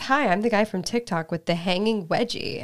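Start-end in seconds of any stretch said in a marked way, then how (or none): none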